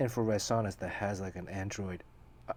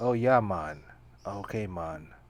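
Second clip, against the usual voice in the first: put-on Jamaican-sounding accent. Telling a friend about drinking in the sauna, doing a Joe Rogan impression. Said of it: "He's always like".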